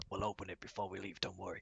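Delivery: very soft, quiet half-whispered aside. Half-whispering in character to a companion walking past: half-whispering in character. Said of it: "sort of whisper to you".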